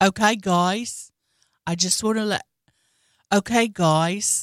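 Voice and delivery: slow, drawn-out put-on Australian accent. Showing how a funny dancer sounds: imitating an Australian accent. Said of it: "he does the best Australian accent".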